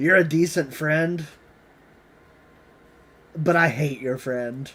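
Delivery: whispering in a put-on voice. Whispering in character to Lionel while dying: whispering in character. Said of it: "I'm gonna whisper to, to Lionel".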